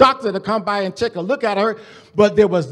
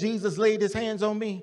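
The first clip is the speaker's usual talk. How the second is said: normal talking voice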